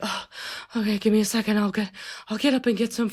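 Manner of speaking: mock-exhausted, feeble voice. Imitating him after he collapses onto the couch from hunger, imitating an exhausted, feeble reply. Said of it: "collapse onto the couch and be like".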